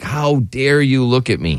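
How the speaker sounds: put-on disgusted, disdainful woman's voice. Showing how a hot woman brushes off a look: put-on disgusted hot woman. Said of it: "It's gotta be more like".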